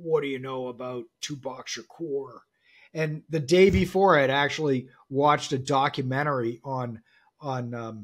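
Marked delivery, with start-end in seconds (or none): 0.0-2.4 put-on quiet, gruff New York accent. Retelling what a man said after you were patched through to him, in Donald David's gruff New York voice. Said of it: "in his gruff sort of New York voice".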